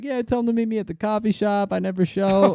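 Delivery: laughing through the words. Retelling a friend's story about standing guys up: imitating a friend laughing while talking. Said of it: "he's dying laughing".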